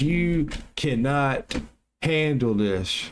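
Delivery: deep booming, slow delivery. Recounting asking God a question and quoting the reply, God's voice, loudest and slow. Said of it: "God told me in the loudest voice".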